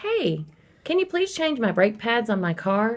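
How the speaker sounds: put-on friendly, courteous, nice polite voice. Making a request the first time, asked in a nice voice. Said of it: "in my nice voice".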